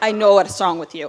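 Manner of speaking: loud, bad Russian accent.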